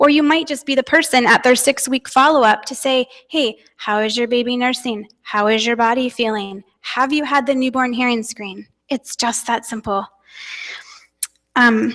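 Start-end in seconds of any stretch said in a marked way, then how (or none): none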